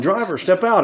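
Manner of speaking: loud shouted yelling. Retelling how he kept shouting at a mail carrier's driver, re-enacting his own yell. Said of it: "I've been yelling".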